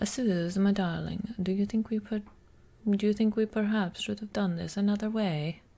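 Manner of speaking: speaking with a put-on Italian accent. Addressing suze as my darling, delivering the line in an italian accent. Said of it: "this starts off with the Italian accent".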